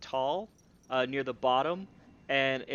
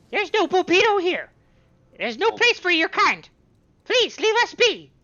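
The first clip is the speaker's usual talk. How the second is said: tiny, very high, very loud, swooping voice; 12 dB louder than usual. A voice behind a door answers visitors asking for Cupido, in a small Darrow voice. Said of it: "You hear in a small Darrow voice".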